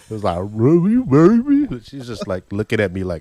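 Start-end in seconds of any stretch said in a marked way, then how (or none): 0.4-1.7 mock stuffed-mouth talk, very high, very loud. Retelling a wedding proposal, acting out speaking with a mouth full of food. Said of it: "it would have fell out of my mouth because it was so full".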